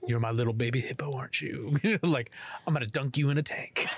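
weird, creepy, teasing put-on voice. Showing the other speaker a kind of degrading talk, in a weird creepy voice. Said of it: "I might punch you for that one".

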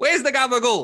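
put-on Italian gangster voice. Mocking an actor's weird accent, speaker does an italian wannabe gangster accent. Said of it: "talking like some like Italian wannabe gangster".

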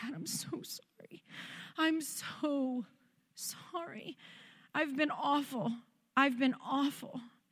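soft, very slow, tearful weeping voice. Retelling a phone call apologizing to her dad, retelling own weeping. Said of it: "and I was just weeping".

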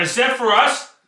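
put-on slurred drunken mutter. Voicing a drunk character at a door sign: drunken mutter. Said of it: "Drunkenly, I'm just gonna mutter".

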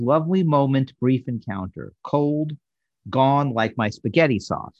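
ordinary talk

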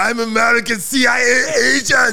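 put-on loud, high-pitched, shouted Austrian accent. Joking about Schwarzenegger pretending to be American, put on a Schwarzenegger accent. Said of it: "where's that accent from?".

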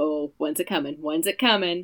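put-on stressed, anxious voice. Retelling a day of waiting for a panic attack: imitating own stressed self. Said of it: "all day a low simmer of stress".

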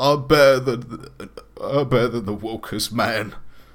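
very loud, high, tearful voice, crying a little. Voicing Jason as he runs from the shop: crying a little. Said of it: "crying a little bit. He goes".

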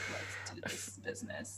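low, hushed, breathy murmur. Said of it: "the lowest freaking, like, Adam's apple".

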